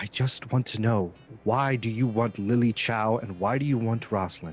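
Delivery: speaking through gritted teeth. Henry demands answers from Miss Sable about why she wants them; through gritted teeth. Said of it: "He gets up and he walks over to the side. / So I punch her and I grit my teeth and I say".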